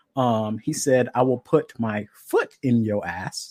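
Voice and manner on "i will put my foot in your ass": put-on, slow, drawn-out, played-for-laughs delivery. Reading out a quoted threat from notes, quoting in a deliberately funny way. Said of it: "Sorry, I'm saying it like this. It's more funny this way".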